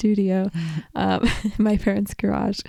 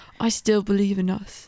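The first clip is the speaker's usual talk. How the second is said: imitated English accent. Retelling what a man said while trying to be romantic, in a British accent. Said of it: "I think it's a British accent".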